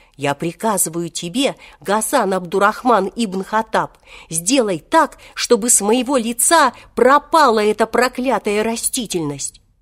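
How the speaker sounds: ordinary delivery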